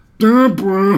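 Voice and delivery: very loud, very high, belted voice. Doing a Ray Romano impression for the other speaker: Ray Romano voice. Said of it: "or he's like".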